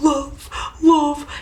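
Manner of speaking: put-on gushy, overwrought, overly emotional sad delivery. Speaker imitates him repeating a word during an exercise; mock-sad, overly emotional. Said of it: "It's like so emotional".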